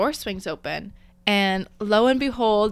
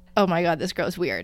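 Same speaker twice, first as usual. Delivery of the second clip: ordinary talk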